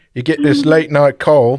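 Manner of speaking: bad put-on Australian accent. Reading out a magazine quote, you are encouraged to try an accent: attempted australian accent. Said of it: "Should I do an Australian accent?".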